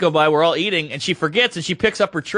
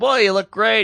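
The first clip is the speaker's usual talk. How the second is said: acted cool-as-a-cucumber calm tone; 4 semitones higher than usual. Retelling meeting a speechless woman, quoting their own compliment while acting out playing it cool. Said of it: "I'm cool as a cucumber".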